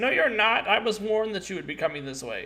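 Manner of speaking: defiant, high voice. Voicing a creature in a dark statue answering the party: defiant voice from the darkness. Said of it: "defiant, uh, voice from the darkness".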